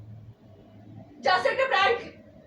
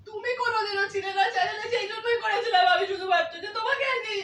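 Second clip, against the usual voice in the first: tearful, half-laughing sobs through the words. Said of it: "দেখো, এটা কাঁদছে".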